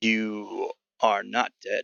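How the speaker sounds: eerie gurgle-like voice. A game master voicing a masked creature questioning a player, eerie gurgling voice. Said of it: "you hear an eerie sound come from it, almost like a gurgle".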